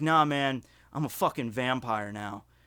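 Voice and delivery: mock deadpan delivery. Telling of asking a man about his hobbies, retelling a deadpan line. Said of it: "because he said it deadpan".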